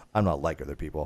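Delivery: mock bone-dry deadpan, very low and flat. Quoting what the daughter said, imitating her deadpan delivery. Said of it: "she was just like deadpan".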